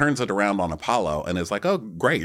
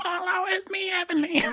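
put-on fake-nice voice, pitched much higher. Acting out Heavenly's call to Apollo, in Heavenly's really high, fake-nice voice. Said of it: "Her Heavenly fake being nice voice".

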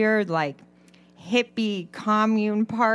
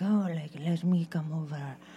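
poor put-on Spanish accent, low and soft; 5 semitones lower, 7 dB quieter than usual. Retelling what a date said as they got closer to the speaker's house, in a bad Spanish accent. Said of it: "I don't know if that's a good accent".

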